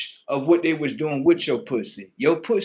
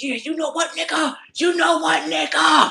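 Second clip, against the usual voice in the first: very high, creaky, rough, worked-up, upset voice; 14 semitones higher, 3 dB louder than usual. Showing how funny an upset partner sounded: imitating an upset girlfriend. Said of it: "I'ma show you how funny it is".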